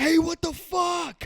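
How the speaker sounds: acted, very high, frightened scared scream. Telling how someone tried to get in the door, retelling a scream. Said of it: "I screamed at the top of my lungs".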